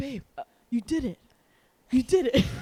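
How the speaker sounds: mock shocked, excited delivery. Retelling a companion's reaction to finding the card, imitating shocked excitement. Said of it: "He's just as shocked as anyone".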